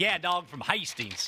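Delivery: put-on, fake Southern accent. Retelling what a guy from the south said, in a put-on southern accent. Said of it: "that accent".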